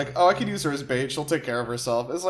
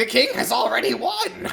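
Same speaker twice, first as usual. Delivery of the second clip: very high, scratchy, creaky little gremlin voice; 9 semitones higher, 3 dB louder than usual. Voicing a captured villain boasting about his king: gremlin voice. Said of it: "like some sort of fucking gremlin".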